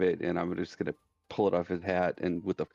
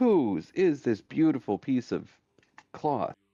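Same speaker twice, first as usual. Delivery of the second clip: big, booming, resounding, drawn-out voice; 7 semitones higher, 4 dB louder than usual. Player speaks in character, asking whose cloth this is, in a booming voice. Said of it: "With a booming voice".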